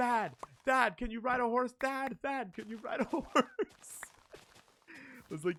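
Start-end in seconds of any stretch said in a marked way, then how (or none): 0.0-3.2 put-on very high, shrill, repeated child yelling. Retelling a child shouting at the screen: imitating a child shouting. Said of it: "Ollie was just shouting at the screen going".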